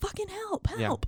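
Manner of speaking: very high, acted-out screaming shriek. Retelling a movie scene where she breaks the window: imitating someone screaming for help. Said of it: "she's screaming".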